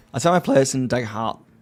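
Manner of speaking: voice cracking. Explaining how you run a game for your players, voice breaking. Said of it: "my voice is breaking".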